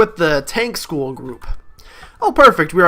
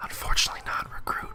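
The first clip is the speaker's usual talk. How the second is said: very quiet, furious, whispered drill sergeant rage. Voicing a sergeant who answers from behind: whispering with rage. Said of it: "soft yet still filled with the rage of a thousand ruck marches, whispers".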